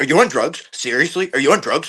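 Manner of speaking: mock wicked aggressive tone. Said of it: "wicked aggressive and shit".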